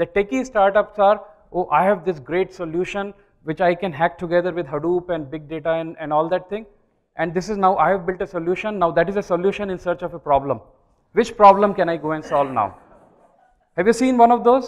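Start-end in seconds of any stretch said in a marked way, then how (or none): none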